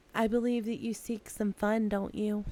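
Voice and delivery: speaking shyly, timid. Narrator voicing a woman who talks to the listener, shy. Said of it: "She shyly talks to you".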